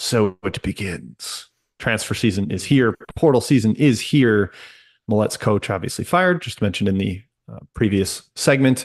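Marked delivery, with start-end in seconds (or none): 0.0-1.5 low, hushed voice. A speaker introducing transfer portal news uses a King Théoden voice. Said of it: "This is basically a Kai King Theoden voice".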